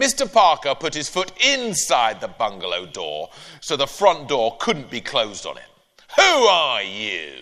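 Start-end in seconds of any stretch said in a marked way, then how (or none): 6.2-7.4 barked out through the nose. Reading a story, a man with his foot in the front door: nasal bark. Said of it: "He barked nasally".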